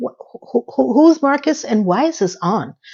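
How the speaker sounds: baffled, perplexed, stammering, tripping over "who". Retelling a character confused by a TV game: imitating perplexed confusion. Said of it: "Carrie's very perplexed".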